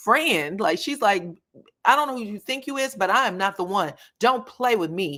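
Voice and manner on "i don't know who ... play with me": mock screaming and fussing, higher pitch. Retelling a fight from the show, imitating Tisha screaming. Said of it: "And she is screaming and fussing and crying".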